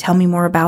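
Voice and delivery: ordinary talk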